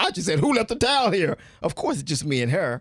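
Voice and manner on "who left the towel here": harsh, aggressive, very high accusing tone. Husband retells what he said to his new wife, retelling an aggressive question. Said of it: "You just scared me when you said it just now".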